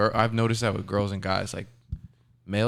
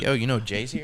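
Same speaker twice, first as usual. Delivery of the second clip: plain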